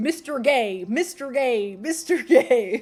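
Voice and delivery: put-on game announcer voice. Mocking a video game's unclear announcer, doing a slurred Smash Bros. Melee announcer voice. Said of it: "how it sounds like he's saying".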